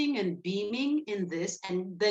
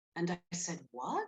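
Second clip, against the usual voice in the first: plain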